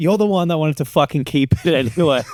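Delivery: loud, bone-dry, unbothered deadpan, acted out. Retelling dad answering mom on a plane, imitating a loud deadpan retort. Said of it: "just deadpan, but real loud".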